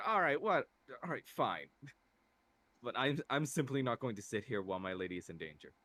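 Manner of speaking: puzzled, slightly affronted. Voicing a character who answers the others: confused and a little offended. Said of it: "confused and a little bit offended".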